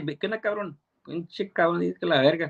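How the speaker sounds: speech in a Mexican accent. Explaining slang picked up from Mexicans, showing a Mexican accent. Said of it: "I have a straight Mexican accent".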